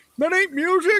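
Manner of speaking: put-on very high, shrill, loud, cranky old-man yell. Imitating the old guy who yells at everybody from the porch: imitating an old man yelling. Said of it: "that old guy that yells at everybody from the porch".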